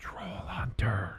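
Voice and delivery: hushed, very quiet whisper. Telling another speaker a movie suggestion, in a whisper. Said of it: "I'm gonna whisper this to you".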